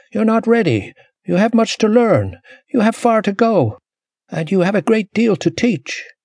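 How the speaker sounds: adamant, insistent, unyielding, very high-pitched voice. Her mother's voice refuses Ashenee passage into the spirit world, adamant. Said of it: "adamantly denying her passage".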